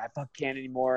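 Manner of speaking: put-on crying voice. Retelling a hard weight cut, retelling own crying words. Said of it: "I start crying".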